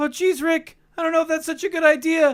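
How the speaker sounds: very high put-on animated cartoon character voice. Doing the voices of a show's two main characters, Morty voice. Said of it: "I'll do their voices now".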